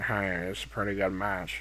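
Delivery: very quiet, low, flat deadpan monotone. Reviewing a wrestling match, speaker mimics the commentator: monotone JR impression. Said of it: "like just monotone".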